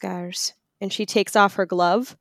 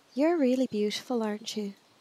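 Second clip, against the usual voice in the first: tender, soft, gentle half-whisper; 3 semitones higher, 6 dB quieter than usual. Voicing a character petting a wounded creature: half-whispering gently to a creature. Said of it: "and just kind of whispering to it".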